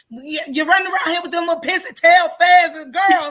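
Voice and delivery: shrill angry voice. Retelling own words while arguing at a son: retelling own angry scolding. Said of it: "I was arguing at my son's".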